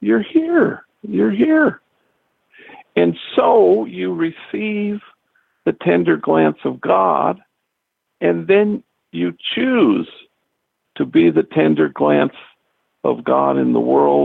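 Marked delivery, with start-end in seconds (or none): 0.0-1.8 acted, overjoyed, out-of-breath, high delight. Voicing what God has on God's mind, acting out breathless delight. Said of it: "say with breathless delight".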